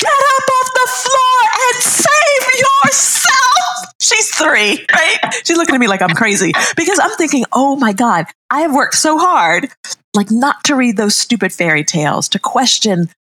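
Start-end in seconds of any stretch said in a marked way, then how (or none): 0.0-3.9 put-on very high, shrill, drawn-out shriek. Retelling screaming at a three-year-old lying on the floor, retelling a scream. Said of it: "And I screamed".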